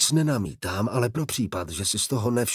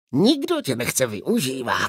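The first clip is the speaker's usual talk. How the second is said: hissing, swooping, hissed delivery. Answering a woman who refuses to be used again, hissing. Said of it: "syčel Iskaral Pust".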